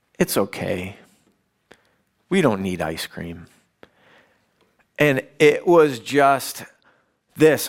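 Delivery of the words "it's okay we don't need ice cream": soft, quick, sweet, gentle little voice. Retelling what Clay said after a long silence, imitating Clay's sweetest voice. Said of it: "says in the sweetest voice you can imagine".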